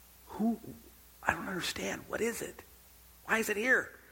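hushed, breathy, under-the-breath whisper. Acting out a parking-lot scene, asking what the giant eye is: whispering. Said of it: "Why are you whispering?".

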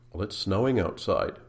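low, soft, level, uninflected monotone. Explaining how tone changes meaning, the speaker gives an example in a flat monotone. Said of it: "in a rather monotone tone".

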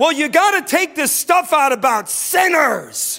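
terrible put-on Scottish accent. Retelling Alvin's reply after Miss questioned Doug: imitating Alvin, bad Scottish accent. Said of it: "my Scottish accent's terrible".

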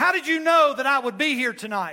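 very loud, shrill, high outburst. Retelling a man's question during the church service: imitating a real loud voice. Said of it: "real loud voice".

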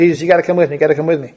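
mock desperate pleading. The speaker retells a dying boy's father pleading with Jesus, acting out begging. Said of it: "he's begging, he's pleading".

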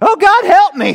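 very high, very loud crying out. Explaining a passage, the speaker acts out Jehoshaphat crying out in prayer. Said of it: "it kind of sounds something like this".

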